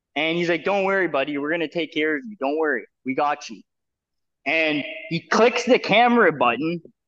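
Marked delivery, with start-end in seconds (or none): 0.7-3.7 acted, steady, soothing, very calm reassuring voice. Retelling how a man turned to a guy in his back seat, imitating a very calm voice. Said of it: "he turns around like in a very calm voice".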